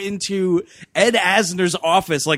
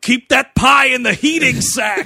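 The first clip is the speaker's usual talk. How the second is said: mock yelling, higher; 6 semitones higher, 5 dB louder than usual. Recounting the listener's dad yelling at the pizza guy, retelling a yell. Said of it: "Your dad's yelling at him like".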